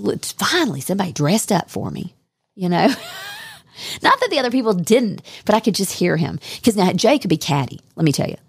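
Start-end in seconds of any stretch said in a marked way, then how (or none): 0.0-2.1 put-on lively, swooping southern accent. Imagining Jay's reaction to a dressed-up guest: southern accent. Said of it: "in a southern accent".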